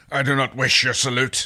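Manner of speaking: said with a snarl. A narrator reads a character's reply in a story, snarling. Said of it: "Dargo said with a snarl".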